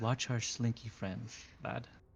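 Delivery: hushed, half-whispered aside. Player speaking as his character, leaning in to Evander, half-whispering. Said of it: "I lean in and I whisper to him".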